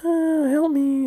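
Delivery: put-on tiny childlike voice, pitched way up. Imagining a creepy figure in a field calling out: little kid's voice. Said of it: "look at the little kid's voice".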